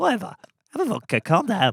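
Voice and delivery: high, swooping sing-song voice. Retelling a birthday scene, doing an impression of Alan Carr. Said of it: "he'd do an impression of Alan Carr".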